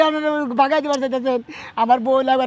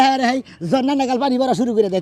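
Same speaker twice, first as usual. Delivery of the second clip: ordinary talk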